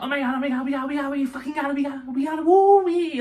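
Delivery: mock very high, thrilled, excited screaming. Retelling forcing something back through the car window, retelling excited screaming. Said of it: "I'm now screaming because it is so close".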